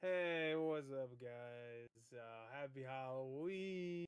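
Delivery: put-on drunk-sounding voice. Imitating how someone sounded on a stream: imitating a drunk-sounding voice. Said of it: "he sounded so drunk".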